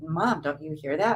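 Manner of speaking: ordinary delivery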